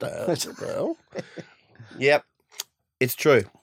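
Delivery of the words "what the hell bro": startled, whispered exclamation. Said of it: "Ange also sounds like a lizard".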